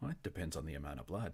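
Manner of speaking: soft, barely audible half-whisper. Voicing a character speaking as the others walk away: half-whispering. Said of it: "you hear her whisper".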